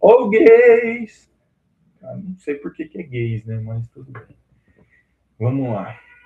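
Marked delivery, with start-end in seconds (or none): 0.0-1.3 very loud, very high street vendor holler. Retelling how the gas vendor shouts while passing by: imitating the gas vendor shouting. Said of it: "ele grita assim".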